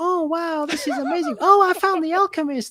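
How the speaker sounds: put-on very high cartoon mouse voice. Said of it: "Mickey Mouse voice the whole way through".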